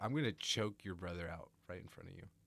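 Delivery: put-on deadpan, straight-faced delivery. Retelling a movie character's line, imitating a deadpan delivery. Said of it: "how he says it with a straight face".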